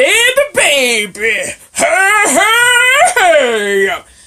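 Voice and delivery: very loud, very slow, shrill, booming grandmother voice. Mocking how a man talks: imitating man's old-grandmother voice. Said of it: "He sounds like an old grandmother".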